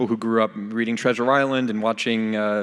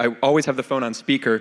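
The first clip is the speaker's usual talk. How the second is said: ordinary talk, nothing marked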